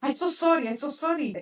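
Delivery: put-on heavy Ukrainian accent. Retelling how the other woman apologized, in a heavy Ukrainian accent. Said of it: "she has like a very heavy accent".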